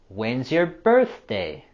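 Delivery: voice drops away with falling tune on "birthday". Practising an english wh-question: falling intonation on birthday. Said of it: "Here we also have our falling intonation".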